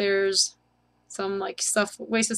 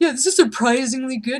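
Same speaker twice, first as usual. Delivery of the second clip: taunting, mocking tone; 4 semitones higher, 5 dB louder than usual. Repeating the other player's remark back, mockingly quoting the other player. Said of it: "he says. Mockingly".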